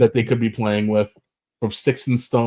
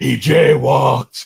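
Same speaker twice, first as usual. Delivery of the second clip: loud, rough, rasping put-on character voice; 2 semitones higher, 5 dB louder than usual. Joking about how the Punisher would handle a mugger: Jon Bernthal's Punisher voice. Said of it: "Bernthal's gonna be like".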